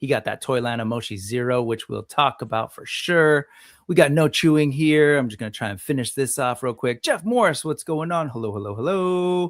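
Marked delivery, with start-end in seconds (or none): 8.3-9.5 put-on broadcast announcer voice, pitched up. Greeting people joining the live chat: radio announcer voice. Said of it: "Why did I turn to the radio announcer guy?".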